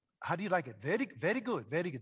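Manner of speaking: laid-on, put-on Indian English accent. Retelling what a man said to the speaker after a laughter session, imitating an indian accent. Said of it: "That's my imitation of Indians".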